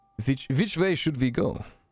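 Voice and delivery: character voice, stumbling over the word "which". Voicing a tired character asking which way to go: Bear's voice. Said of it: "says Bear".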